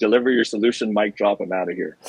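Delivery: plain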